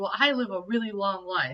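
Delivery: ordinary delivery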